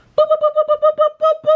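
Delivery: sing-song chime-like boops, chirped very high.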